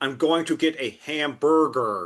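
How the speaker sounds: put-on overdone American accent with hard R's. Imitating an actor trying an American accent: Benedict Cumberbatch's American accent, hard R's. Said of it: "Benedict Cumberbatch try and do a American accent".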